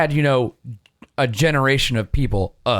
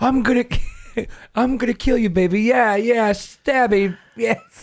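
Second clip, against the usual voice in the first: put-on british spy comedy voice, higher; 9 semitones higher than usual. Joking about a modded game killer: Austin Powers voice. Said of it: "let's not do any more Austin Powers impressions".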